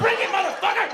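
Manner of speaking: high, loud, triumphant proclaiming yell.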